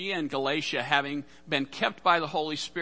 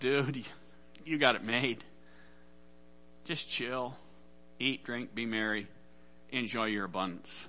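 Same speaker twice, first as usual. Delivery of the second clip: soft, smug, self-satisfied tone; 3 semitones lower, 7 dB quieter than usual. Retelling a story of a man talking to himself after a bountiful harvest, smug. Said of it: "looks at himself kind of smugly and says".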